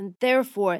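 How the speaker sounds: plain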